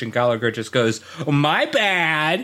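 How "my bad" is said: put-on voice, the word bad drawn out. Acting out an imagined TV scene where the comedian answers: Gallagher impression. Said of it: "that was an amazing impression".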